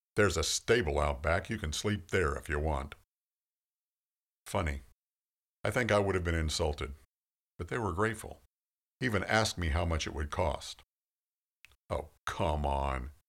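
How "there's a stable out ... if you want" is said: voice full of disgust. Retelling offering late guests the stable out back: imitating own disgusted tone. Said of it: "I said in kind of a disgusted tone".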